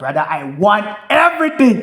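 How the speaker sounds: loud, high, eager, over-the-top excited gushing. Speaker retells a guy who wanted every detail: imitating an excited guy. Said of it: "bro, you are so excited".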